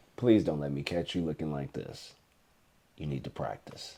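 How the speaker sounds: put-on whisper. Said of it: "I just whispered in his ear".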